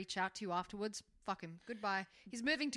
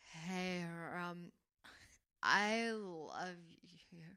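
mock drunk woman voice, lower; 3 semitones lower than usual. The speaker acts out a drunk woman's message, imitating a drunk woman. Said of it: "Sorry, she's drunk".

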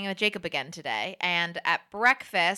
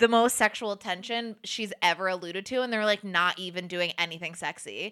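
ordinary talk

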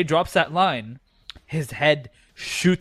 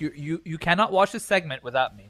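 ordinary talk, nothing marked

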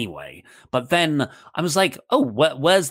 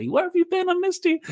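very high, quick, excited, eager puppy voice. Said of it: "I usually go and meet her like a little puppy".

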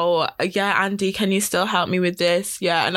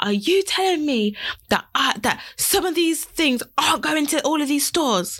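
mock shouting, much higher pitched; 8 semitones higher than usual. Speaker retells what a woman said when she shouted at them: retelling a shout. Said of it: "She shouted".

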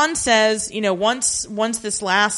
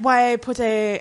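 put-on French accent. Retelling what a character asks in a TV episode: French accent. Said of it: "I'm giving her a French accent".

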